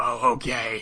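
the grossest, very deep voice possible. Retelling a cartoon scene where a boy answers Clover: imitating the deepest, grossest voice. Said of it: "the deepest, grossest voice".

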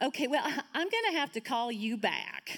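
put-on Southern accent. Imitating a woman's phone call to Jesus, put-on Southern accent. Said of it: "make it try to sound, um, Southern".

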